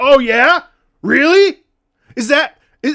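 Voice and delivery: very loud, high, shrill, drawn-out furious yell. Retelling getting mad at chat during past streams: imitating own mad yelling. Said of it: "so fucking tilted and mad I was yelling".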